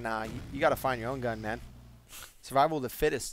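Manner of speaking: normal talking voice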